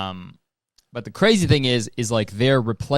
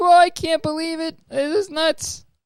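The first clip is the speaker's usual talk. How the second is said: very high, nasal, stammering voice. Showing a Rick and Morty impression: nasal stuttering Morty impression. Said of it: "a lot of stuttering".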